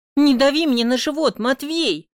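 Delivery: getting angry. Pressed against a wall by Matvey, the narrator pushes him away: getting angry. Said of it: "уже злюсь".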